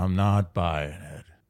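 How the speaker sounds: voice trailing off breathy at the end. Retrying the impression with breathiness at the end: Patrick Warburton impression. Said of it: "He has the breathiness at the end".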